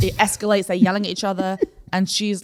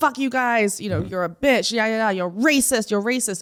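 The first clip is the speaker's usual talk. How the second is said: acted-out angry, aggressive man voice; 2 semitones higher than usual. Retelling a man's outburst in a coffee shop, imitating an angry, aggressive man. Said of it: "he was being really like aggressive and angry".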